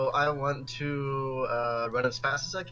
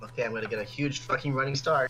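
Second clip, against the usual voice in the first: usual speaking voice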